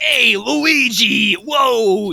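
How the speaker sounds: tough-guy, streetwise, brash voice, name drawn out. Recapping the movie, speaker imitates Mario calling to Luigi as the 'I'm walking here' guy. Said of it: "the archetypical, hey, I'm walking here guy".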